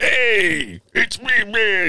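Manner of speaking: very high, stretched-out, drawn-out character voice. Imitating what the Hulk would say when he shows up: imitating Ruffalo's Hulk. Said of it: "he's gonna be like".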